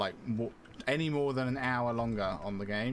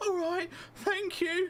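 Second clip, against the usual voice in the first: very high, put-on child voice. Imitating a game character's line: imitating a fake child's accent. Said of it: "sounds like someone's trying to fake a child's accent".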